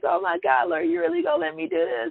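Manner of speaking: put-on, choked-up, very high tearful crying. Retelling own past words said to God while journaling: retelling own past crying.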